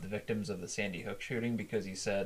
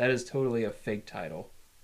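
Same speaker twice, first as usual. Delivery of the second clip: normal talking voice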